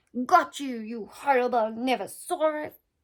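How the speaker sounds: loud, growling storybook voice. Narrator reading Tiny swinging his net at a noise in the undergrowth, growling. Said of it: "he growled".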